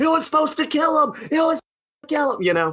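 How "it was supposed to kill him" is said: put-on scream, much higher. Picturing a botched version of the ending with a co-host: imitating Kenny screaming. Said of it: "on the stage screaming like".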